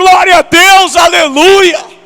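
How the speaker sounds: loud, open, high shouting. Urging the congregation to react with jubilant praise: shouting praise to god. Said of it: "Eu queria ver você pulando, gritando".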